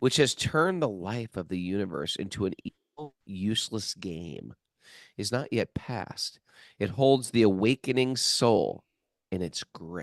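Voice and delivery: dramatic, theatrical reading. Reading a passage aloud to another speaker: dramatic reading. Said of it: "that was a dramatic reading".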